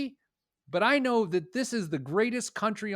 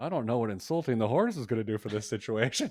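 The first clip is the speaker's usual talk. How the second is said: acted-out muttering under the breath; 7 semitones lower than usual. Retelling what they said to their vet uncle about the horse, muttering under breath. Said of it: "I sort of under my breath".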